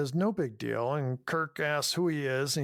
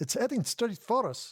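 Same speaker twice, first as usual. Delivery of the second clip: put-on high, accented character voice with a touch of vampire; 7 semitones higher than usual. Asked by the other speaker to redo the quote: Chekov voice. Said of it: "That's pretty, pretty good".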